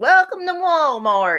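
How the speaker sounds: high-pitched, welcoming greeter voice. Retelling a Walmart greeter impression: imitating son's Walmart greeter impression. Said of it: "My son does this great greeter of Walmart impression".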